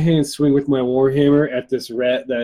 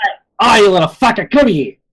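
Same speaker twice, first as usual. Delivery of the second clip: loud, pitched-up hollering yell; 7 semitones higher, 5 dB louder than usual. Yelling at a rat in the game, calling it over: yelling at the rat. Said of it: "I yell at the rat".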